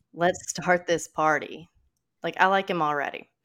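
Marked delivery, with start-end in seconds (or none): 0.2-1.7 put-on fake American accent. Retelling a heist, the robber Olsen runs in yelling in Olsen's fake American accent. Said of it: "using a fake American accent".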